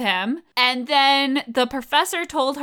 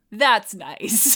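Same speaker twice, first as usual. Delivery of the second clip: mock sarcastic delivery; 3 semitones lower than usual. Quoting her line from the film: imitating a sarcastic "that's nice". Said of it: "most sarcastic".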